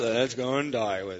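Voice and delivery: glum, gloomy, droopy cartoon donkey voice. Discussing a movie, delivering the quoted line in an Eeyore voice. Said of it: "can't you just hear the voice?".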